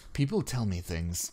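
mild, gentle, low-key, understated delivery. A character answers the player, speaking softly. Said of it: "Lou speaks softly".

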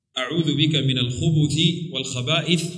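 plain

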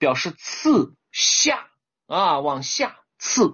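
spoken very slowly.

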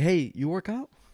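rough, halting, broken non-native English. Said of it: "but, like, a rough English".

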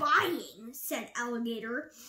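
ordinary delivery

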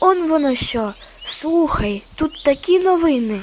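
startled, sudden surprised exclamation. A magpie reading a newspaper in the forest exclaims in surprise. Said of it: "здойкнула".

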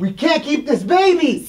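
very high, very loud, shrill yelling. Arguing with a partner about keeping the baby, yelling. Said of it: "Stop yelling at me!".

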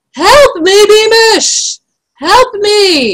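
very high, long-drawn, drawn-out shout. The king calls out to his major in the darkness, shouting. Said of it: "shouted King Fred".

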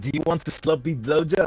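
put-on Irish accent that sounds French. Speaker tries an accent for a woman living in Ireland, fake Irish accent sounding French. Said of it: "that was a French accent you just put on for Ireland".

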